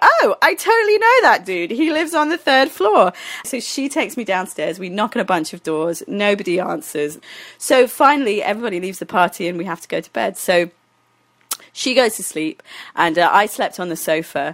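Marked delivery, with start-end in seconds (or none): 0.0-3.1 relaxed, high, loud delivery. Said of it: "And she was like".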